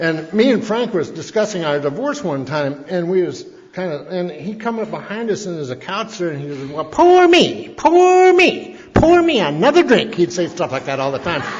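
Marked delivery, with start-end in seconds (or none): 6.7-10.1 piercing squeal, very high, very loud, drawn out. Retelling what a man said behind a couple discussing their divorce, high shrill voice. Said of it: "had this high little shrill voice".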